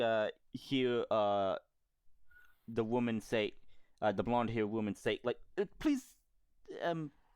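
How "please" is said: hesitant, shy, stammering, pitched up. Describing a scene, voicing the blonde-haired woman's plea with shy stuttering. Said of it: "she kind of like stutters".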